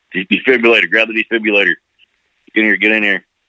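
mock urgent yelling with a stumbling start. Retelling how an EMT at the doorway called to his buddy: imitating someone yelling. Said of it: "he just yells back to his buddy".

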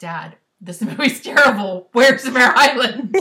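loud, laughing delivery, slowing at the end.

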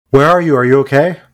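high, loud yelling. A player's character hears a scream for help and calls back: yelling out. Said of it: "I'm gonna yell out".

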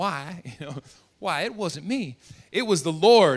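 drawn-out southern drawl in a woman's voice. Telling how a successful woman answered a question, quoting her: southern woman's drawl. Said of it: "a southern drawl, southern woman".

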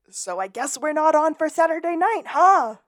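shrill scream climbing very high. Recapping an episode's ending, the speaker quotes Lassiter: Lassiter screaming, retold. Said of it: "Lassiter screaming".

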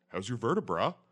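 put-on dude bro character voice. Joking about a new character, a dude bro chiropractor: dude bro chiropractor voice. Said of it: "that's my new character".

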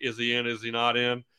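ordinary talk

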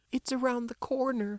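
trembling, quavering, very high voice. Reading a character giving a man directions to the office, quavering. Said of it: "Susan replied quaveringly".

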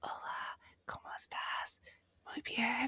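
weird, hushed, breathy whispered Spanish. Imitating Ken's Spanish phone voice: imitating a quiet, weird phone voice. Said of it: "really quiet and weird".

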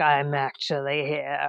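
put-on deep demon voice. Describing the horror scene where the demon speaks, in a demon voice. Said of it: "the demon voice says".

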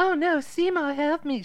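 very high, slow, squeaky little voice. Retelling a movie scene, quoting a character: imitating her squeaky voice. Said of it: "She talks like that".

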